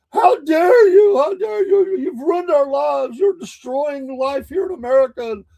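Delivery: put-on raging rant, screamed high, loud, furious. Retelling a young girl on the street screaming at a court building; imitating a girl screaming furiously. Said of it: "just screaming".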